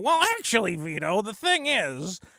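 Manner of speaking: argumentative know-it-all tone. Complaining about always being contradicted: imitating Frog Tony. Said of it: "Anything I say, you go".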